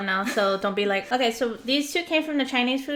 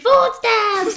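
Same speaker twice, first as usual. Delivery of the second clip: very high, loud, shrill excited scream; 10 semitones higher, 9 dB louder than usual. Retelling a past moment of excitement, imitating own scream. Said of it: "and I screamed".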